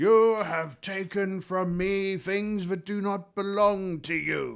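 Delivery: booming, very high skeleton-king villain voice. Narrating a game, the speaker voices a crowned skeleton figure: booming villain voice. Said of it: "this booming voice goes".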